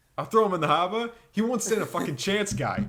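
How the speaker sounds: loud fake Boston accent. Showing how to get the Boston accent down, in a put-on Boston accent. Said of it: "that's how you get the Boston accent down".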